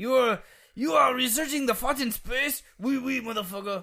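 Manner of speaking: put-on awful Italian accent, pitched way up. Imagining a very disappointed Galileo reacting to us right now, in a horrible Italian accent as Galileo. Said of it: "He's like a horrible Italian accent".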